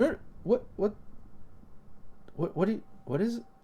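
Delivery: bewildered, stumbling, stammering whisper. Voicing a woman who was just screaming at the group, confused stammering. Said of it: "she kind of stops and looks confused".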